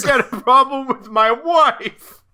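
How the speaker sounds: very high, loud, put-on New York accent. Explaining how people talk in a Spider-Man movie, doing a put-on New York accent. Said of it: "I'm from somewhere in New York".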